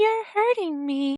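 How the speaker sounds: put-on, high, effeminate voice. Asked if it had an effeminate voice, the speaker imitates it. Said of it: "did you say it had an effeminate voice".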